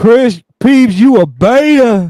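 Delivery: put-on voice, very high loud shout, drawn-out "beta". Calling another speaker a beta on request, in the Jesse voice. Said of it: "Can you call Chris a beta in the Jesse voice?".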